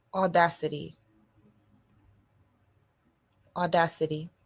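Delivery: drawn out deliberately. A speaker repeats a word for the audience, saying it slowly. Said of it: "so I'm gonna just say it slow".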